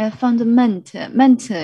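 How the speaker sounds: stress landing on mental. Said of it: "the stress is on mental".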